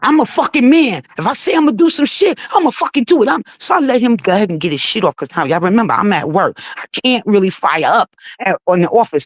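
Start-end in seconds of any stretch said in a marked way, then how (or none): 0.0-3.3 mock heated, furious, ranting outburst. Retelling how the other person on the call reacted: imitating someone spazzing out. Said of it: "he was like".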